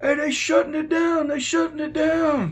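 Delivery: mock yelling, very high and loud. Retelling how an inmate started yelling out: imitating someone yelling out. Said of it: "starts yelling out".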